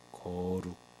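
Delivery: very low, deep, very soft, hushed 거룩. Mocking a preacher's way of saying 거룩: deep low voice on 거룩. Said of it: "목소리 굵어져서 이렇게 낮게 깔면".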